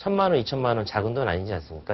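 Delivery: ordinary delivery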